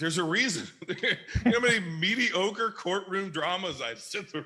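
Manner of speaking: high, loud laughter in disbelief.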